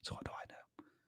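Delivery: hushed, very soft, breathy whisper, barely audible. Answering audience questions, the host finishes a point: whispering. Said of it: "I don't know why I'm whispering right now".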